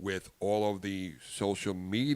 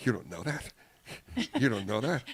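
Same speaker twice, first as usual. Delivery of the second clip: put-on scoffing, laughing, mocking disbelief; 3 semitones higher than usual. Retelling the coffee seller's reaction, imitating a man laughing at him. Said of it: "he laughed at me like".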